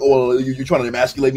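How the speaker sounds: put-on fast, panicked talking. Retelling how Sneako freaked out in a debate: imitating Sneako talking fast. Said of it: "he was just talking fast".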